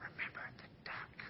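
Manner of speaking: soft, voiceless whisper with menacing tone.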